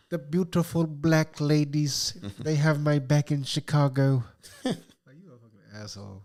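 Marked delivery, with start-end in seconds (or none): 0.1-4.2 loud, campy villain voice. Mocking a man's remark about Chicago, in a Dr. Evil-like voice. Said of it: "he almost talks like Doctor Evil a little bit".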